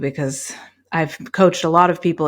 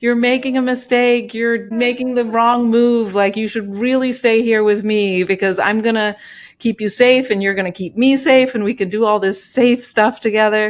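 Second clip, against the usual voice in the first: mock fearful screaming, higher; 7 semitones higher, 4 dB louder than usual.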